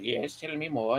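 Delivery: caricatured, put-on German accent. Retelling a film scene, voicing the psychologist in a put-on German accent. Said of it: "the psychologist goes full Nazi on him, like, the German says".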